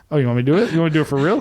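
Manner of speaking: put-on sassy woman's voice. Speaker retelling what a sassy woman said to a man, sassy woman impression. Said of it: "your impression of a sassy chick?".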